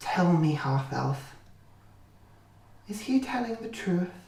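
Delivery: weak, shaky, trembling otherworldly alien voice. Running a game, the speaker voices a presence in a character's head: shaky, weak, alien voice. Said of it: "a sort of a shaky, weak voice, a very alien voice".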